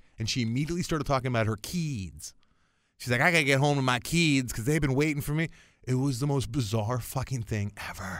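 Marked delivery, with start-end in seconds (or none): 3.2-5.5 put-on heavy, thick American regional accent, pitched up.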